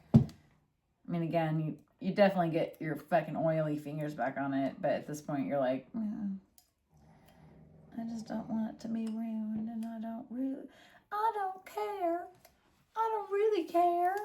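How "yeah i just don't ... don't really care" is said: fake, put-on Southern belle accent. Acting out someone's thoughts: put-on Southern belle accent. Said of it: "I'm trying to practice my voices".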